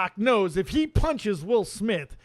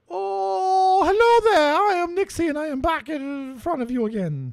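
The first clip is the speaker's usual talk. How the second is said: put-on Scottish accent, pitched up, long drawn-out "oh"; 7 semitones higher than usual. Starting another Nixie thought segment, as Nixie in attempted Scottish accent. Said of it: "I'm trying to get a little Scottish in there".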